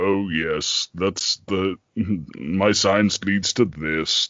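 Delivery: exaggeratedly deep, low stage actor voice. Imitating an actor playing Jekyll in a film: Paul Massie's overly deep Jekyll voice. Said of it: "doing, like, an overly deep voice".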